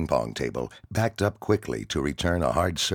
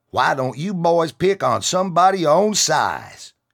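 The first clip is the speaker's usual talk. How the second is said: put-on very high, loud, drawling southern accent; 13 semitones higher, 7 dB louder than usual. Narrating one of a group speaking up for a young kid, southern drawl. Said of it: "stated in a southern drawl".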